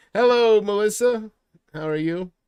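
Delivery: loud yelling, as if across a distance. Greeting someone far away, apologizing for yelling in their direction. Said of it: "I'm sorry I'm yelling in your direction".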